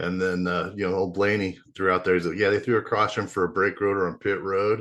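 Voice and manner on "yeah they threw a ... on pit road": sarcastic delivery. Discussing a race caution, the speaker is imitating Ryan Blaney's sarcasm. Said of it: "he made it like sarcastically saying it".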